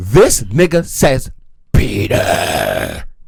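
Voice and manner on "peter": very deep, rough, creaky male voice. Retelling his aunt's daughter answering her during prayer: imitating deep man voice. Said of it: "answering in a deep man voice".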